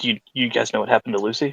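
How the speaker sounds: grave, hushed, serious tone. Retelling what someone said once the line went quiet, in a hushed, serious tone. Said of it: "in a much more serious tone, he'll hushedly kind of say".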